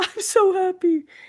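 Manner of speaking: play-acted, high, weepy voice, crying with joy. Retelling own reply to the same news: retelling own crying. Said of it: "I'm crying".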